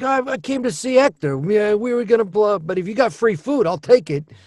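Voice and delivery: put-on Italian accent. A voice actor describes his Casagrandes character Vito: Vito's Italian accent. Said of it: "And he's Italian".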